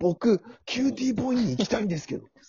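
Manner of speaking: very high, burning, all-out earnest, heated delivery. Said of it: "どんだけ熱を帯びて言ったんよ".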